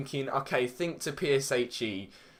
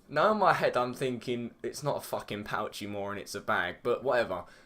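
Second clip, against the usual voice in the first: ordinary talk, nothing marked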